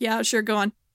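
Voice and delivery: jaded, tired, bored, overworked-sounding tone. Voicing a server checking an id: jaded overworked server. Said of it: "a jaded retail worker who's very underpaid and very overworked".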